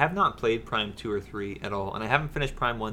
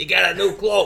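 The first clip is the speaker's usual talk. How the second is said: very high, very loud, shrill put-on New York smoker voice; 9 semitones higher, 10 dB louder than usual. Picturing a robot character as a smoker, in a weird New York smoker accent. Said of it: "a weird, you know, New York accent smoker".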